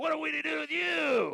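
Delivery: rough, creaky demon voice, very high, swooping. Performer demonstrating into the mic, doing a demonic voice. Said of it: "here's my demonic voice".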